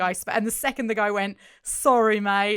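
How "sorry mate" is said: put-on Aussie accent, louder. Quoting a character's apology while discussing an episode: Australian accent. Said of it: "in that, like, Australian accent".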